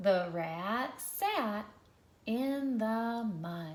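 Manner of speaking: fluent reading phrased in smooth chunks. Showing learners how a sentence sounds read fluently: fluent phrased reading. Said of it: "One more time".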